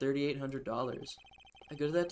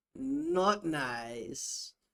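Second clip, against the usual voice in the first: put-on Kazakh accent voice. Doing a live Borat impression: Borat impression. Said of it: "a live Borat impression".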